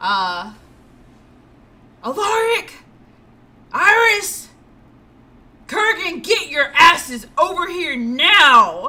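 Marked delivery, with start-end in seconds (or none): 2.0-8.9 aggressive, loud, furious snarling yell. Voicing a character calling allies across the field: aggressive loud snarl. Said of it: "very aggressively and very loud snarl".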